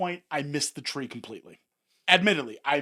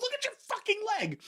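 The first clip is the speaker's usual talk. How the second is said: very high-pitched put-on scream; 4 dB quieter than usual. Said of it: "and Chelsea screams".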